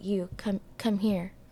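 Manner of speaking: put-on low whisper. Retelling how a man called them over, in a low whisper. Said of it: "he's like whispering to me".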